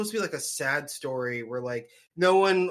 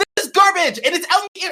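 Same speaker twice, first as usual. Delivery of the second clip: very loud, high, shrill sports-fan yelling; 13 semitones higher, 9 dB louder than usual. Ranting about a bread horse to other speakers, yelling. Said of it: "I'm yelling".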